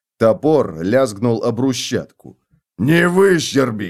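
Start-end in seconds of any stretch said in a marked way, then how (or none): 2.8-3.9 sharp, loud, barked delivery. Narrating a character's line as a guard's axe hits the cobbles, barking. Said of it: "рявкнул Готрек".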